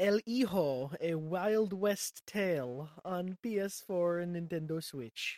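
slow, careful Spanish accent throughout. Reading a game title aloud after another speaker asks to hear it pronounced: Spanish accent. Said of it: "Did the whole thing with an accent".

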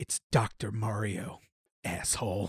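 slow, soft whisper right into the ear. Acting out a joke scene where Mario answers: Mario whispering. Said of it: "And he whispers into my ear".

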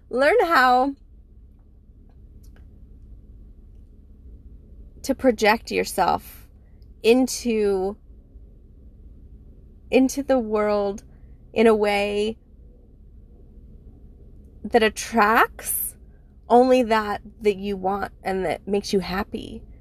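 slightly choked up, voice catching with emotion. Giving advice to listeners, the speaker continues, a little choked up. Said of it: "I'm a little choked up".

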